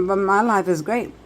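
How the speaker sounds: ordinary delivery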